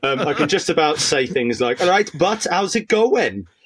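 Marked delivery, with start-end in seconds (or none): 1.8-3.4 put-on, pitched-up Welsh accent drifting into Indian. Speaker shows the phrases they can just about manage, Welsh accent attempt. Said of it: "whenever I try doing a Welsh accent".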